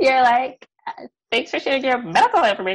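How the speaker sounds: very high, cracking-up, giggling through words. Retelling what the other speaker just said, laughing while talking. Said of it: "I'm literally cracking up".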